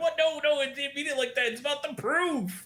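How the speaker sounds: put-on bashful, shy, very high-pitched voice. Retelling a scene, imitating Okaruda sounding shy. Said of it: "And he gets shy".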